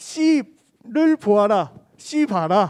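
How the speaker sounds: very drawn-out, loud, slow Korean regional dialect. Speaker retells a friend's words while looking at a watermelon, loud regional dialect. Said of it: "목소리가 크니까 / 사투리 쓰는 거".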